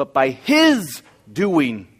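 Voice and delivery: "his" stressed hardest of all words. Speaker rereading verse 30, strongest stress on his. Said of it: "I think we emphasize the word his".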